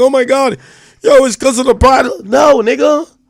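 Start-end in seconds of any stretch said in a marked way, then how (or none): 0.0-2.1 very high, very loud fake bawling. Asking if anyone hears the speaker complaining about being swatted: mock crying. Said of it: "sitting here and crying like".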